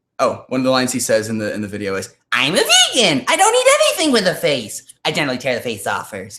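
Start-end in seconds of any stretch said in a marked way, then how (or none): 2.3-6.4 performed comic character voice, high and widely swooping. Trying out the Enos voice after being asked about it: Enos voice. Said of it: "do you make that voice on your own?".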